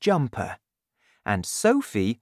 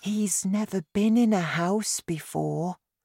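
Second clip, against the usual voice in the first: higher pitch, plain delivery; 7 semitones higher than usual. Narrator voicing a character explaining someone to the Queen, quietly. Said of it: "Sophie told the Queen quietly".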